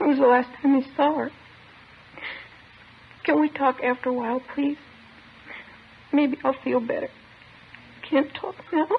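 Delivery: tearful, crying, speaking through tears. Asked about the morning, recalling the last time she saw Mama, crying. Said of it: "I don't know why I'm crying".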